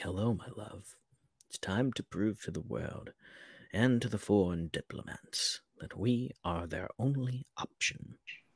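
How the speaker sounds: creepy, sinister villain voice. Acting out Kirigan's line to the world's diplomats: imitating Kirigan being creepy. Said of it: "being creepy".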